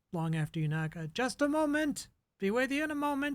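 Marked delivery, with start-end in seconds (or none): 1.2-3.4 very high, loud voice calling out. Voicing someone behind a door answering a knock: yelling out. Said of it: "you hear a voice yell out".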